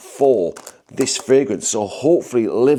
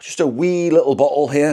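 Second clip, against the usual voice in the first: offhand, put-on Scottish accent; 3 semitones higher than usual. Showing a wee bottle of fragrance just bought: Scottish accent. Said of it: "I don't know why I did a Scottish accent".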